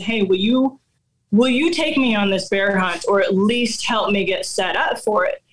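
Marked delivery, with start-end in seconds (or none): none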